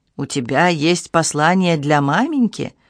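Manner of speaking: ordinary delivery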